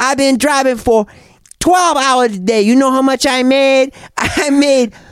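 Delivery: Korean accent impression. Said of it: "I can't do the accent".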